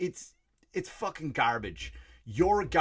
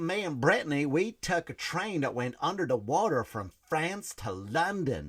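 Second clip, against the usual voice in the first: put-on Southern American accent. Quoting a woman from a documentary, in a Southern accent. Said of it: "a Southern person that has that accent".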